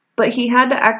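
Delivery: ordinary delivery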